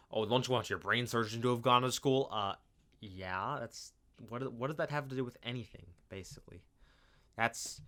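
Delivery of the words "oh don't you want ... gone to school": usual speaking voice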